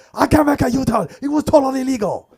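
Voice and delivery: mock very high, loud, exasperated angry outburst. Retelling an argument with another driver over a U-turn: imitating own angry outburst. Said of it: "I finally blew up".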